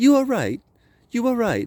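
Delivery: silly, exaggerated put-on British accent, very high. Quoting people who annoyed him, in a stupid British accent. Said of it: "they got a stupid British accent".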